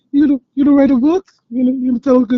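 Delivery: mocking put-on cartoon voice. Quoting a cartoon episode to the other speaker, Stewie voice mocking someone. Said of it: "he was like mocking Brian".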